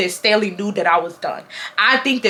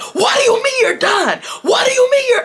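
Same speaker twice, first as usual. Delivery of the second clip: shrill, very high, demanding yell. Telling viewers how a boy started yelling at the speaker: retelling a boy's yell. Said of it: "this boy started yelling at me".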